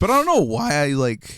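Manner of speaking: breaking, cracking voice, cracking mid-line. Talking with a podcast co-host, voice cracking. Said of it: "That was a voice crack".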